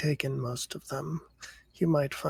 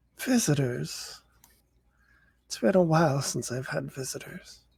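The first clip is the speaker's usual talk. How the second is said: put-on grandmother character voice. Voicing Grandma, who turns slowly toward the visitors: voicing the Grandma character. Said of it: "She turns really slowly to look at you and goes".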